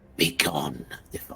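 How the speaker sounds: soft, slow, drawn-out half-whisper, close in. In a game scene, a woman leans down eye to eye, half-whispering. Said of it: "she whispers".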